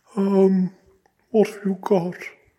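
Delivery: quavering high falsetto. Reading a story, Bunny answers the shop staff's question about pies: quavering, effeminate falsetto. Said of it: "in his quavering, rather effeminate falsetto".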